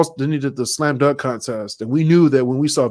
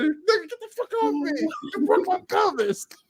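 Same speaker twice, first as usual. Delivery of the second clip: put-on angry man voice, higher and quieter; 8 dB quieter than usual. Retelling what an injured man shouted: imitating an angry man. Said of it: "He was so mad".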